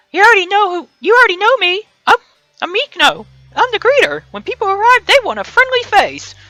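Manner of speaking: little, squeaky, chirping cartoon mouse voice. The resort greeter introducing themself, speaking in a Mickey Mouse voice. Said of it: "I'm starting to sound like Mickey Mouse".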